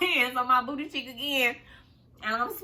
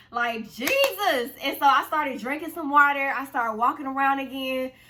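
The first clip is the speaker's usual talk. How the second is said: usual speaking voice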